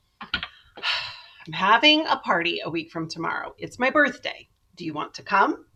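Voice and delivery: ordinary delivery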